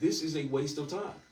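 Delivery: ordinary delivery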